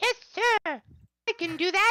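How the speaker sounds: tiny, very high, misty little voice. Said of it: "a little voice, almost like a a little spray of mist".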